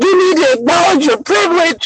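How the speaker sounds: heated, high screaming. Retelling what people were saying: imitating people screaming. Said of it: "there's people screaming".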